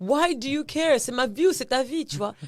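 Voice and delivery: high-pitched, loud, indignant tone.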